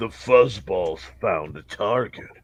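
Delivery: very low, soft, throaty, guttural rumble. Narrating a game scene, speaker voices an unseen hyena-like creature, deep guttural voice. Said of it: "you hear a deep guttural voice".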